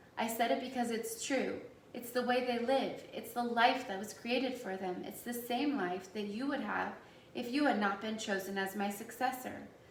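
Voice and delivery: ordinary talk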